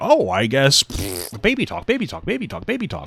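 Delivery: mocking, dismissive sing-song, drawn out. Mocking how a video maker ignores the argument: imitating someone dismissing it. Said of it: "You're just like".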